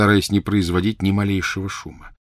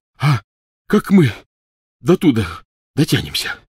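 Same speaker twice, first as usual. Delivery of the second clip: gasped, much higher and louder; 5 semitones higher, 4 dB louder than usual. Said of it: "выдохнул Рон".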